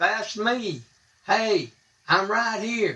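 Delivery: high, slow, drawn calling out.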